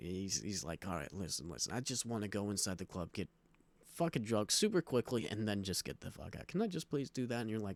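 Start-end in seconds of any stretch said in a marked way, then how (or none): none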